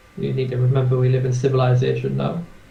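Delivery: ordinary delivery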